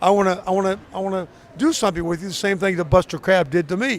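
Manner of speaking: ordinary talk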